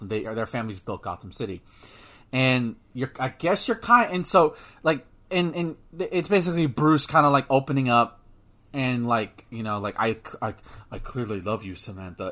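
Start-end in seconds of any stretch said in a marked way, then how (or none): 9.8-12.3 flat put-on voice, much lower, quieter. Describing a scene where Bruce Wayne opens up to Samantha, in flat monotone. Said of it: "in the most monotone".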